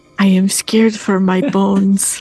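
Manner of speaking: whispered, in character voice. Voicing a character who leans down to another character: whispering in character. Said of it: "leans down and whispers to Alansha".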